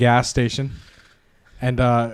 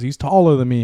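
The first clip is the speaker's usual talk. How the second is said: usual speaking voice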